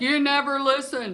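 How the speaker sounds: mock, high-pitched yelling. Retelling what the husband always says: imitating husband yelling. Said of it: "my husband always yells at me".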